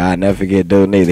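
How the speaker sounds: ordinary delivery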